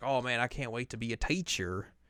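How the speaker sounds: Southern US accent. Acting out a line you say you would never say: southern accent. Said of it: "I got a southern accent there".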